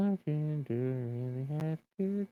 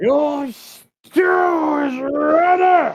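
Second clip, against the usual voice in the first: shrill, booming, very loud, very slow drawn-out yell; 15 dB louder than usual. Voicing a bar worker calling out that the stew is ready: yelling. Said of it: "What the hell was he yelling for?".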